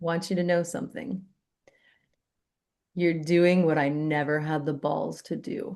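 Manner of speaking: imitated choked-up voice. Speaker retells what a man said to him as he was leaving, imitating a choked-up voice. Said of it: "he got all like choked up".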